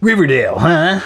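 high, lifted, put-on character voice. Imitating a character in an imagined after-credits scene: imitating Sonic. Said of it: "Sonic comes up and he's all like".

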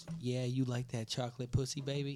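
sexy, sultry, seductive come-on voice. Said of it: "she get this sexy ass voice and goes".

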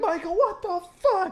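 high, freaked-out, panicked screaming outburst. Recounting friends panicking in a car, retelling a scream. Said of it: "we're all screaming and freaking out".

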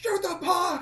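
very high-pitched, loud yelling shout. Retelling how a friend yelled at the game on tv: imitating someone yelling at the tv. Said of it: "He's, like, yelling at the T V".

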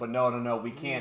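ordinary talk, nothing marked

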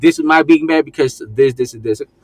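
ordinary delivery

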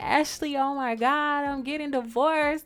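drawn-out hysterical outburst, high-pitched and loud. Retelling calling her sister after leaving the house, retelling her hysterical call. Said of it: "like you're hysterical".

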